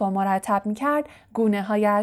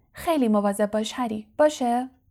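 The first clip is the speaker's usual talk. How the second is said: plain reading voice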